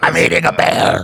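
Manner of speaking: put-on strained raspy voice. Joking about eating a bear: RFK Jr. impression. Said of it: "Is that how he sounds?".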